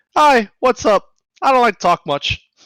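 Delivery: shrill, very high, loud put-on voice. Voicing the host body, who doesn't talk much: higher pitched voice. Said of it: "in a higher pitched voice".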